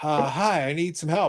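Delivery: put-on stoned voice. Retelling a late-night support call, imitating a stoned caller. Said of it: "he's, like, stoned out of his mind".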